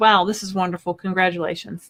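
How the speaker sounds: ordinary talk, nothing marked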